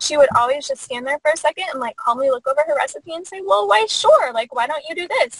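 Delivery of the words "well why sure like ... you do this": put-on sweet grandmotherly voice, pitched up. Retelling how grandma answered her in the kitchen: super sweet grandma voice. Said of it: "in this super sweet grandma voice".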